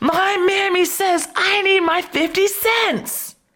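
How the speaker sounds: mock very high, shrill screaming yell. Retelling a girl holding her ground, imitating a scream. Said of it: "she screamed and yelled".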